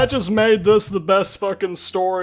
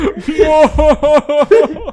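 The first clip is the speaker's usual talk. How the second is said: high, loud, teary laughter, crying with laughter. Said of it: "I'm crying".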